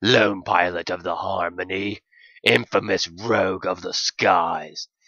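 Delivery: rough, gruff, stout dog character voice. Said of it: "He was a stubby, stout excuse for a canine. ... gruff, but fun!".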